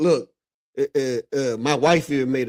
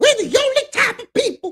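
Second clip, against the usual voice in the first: very high, loud put-on voice; 5 dB louder than usual. Quoting what a man once stated: put-on voice of the quoted man. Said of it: "I'm gonna do his voice".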